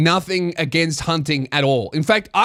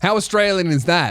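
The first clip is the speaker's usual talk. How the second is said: normal talking voice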